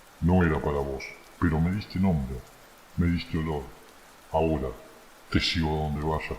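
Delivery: very low, deep, guttural, throaty voice. Narrator reads the voice from the forest shadow speaking to El Tano: deep guttural voice. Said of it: "Continuó la voz".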